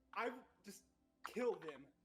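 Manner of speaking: screamed, high battle scream. Player voicing their character during a combat round, screaming out. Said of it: "and he screams out".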